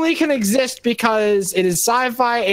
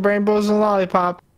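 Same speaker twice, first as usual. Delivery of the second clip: plain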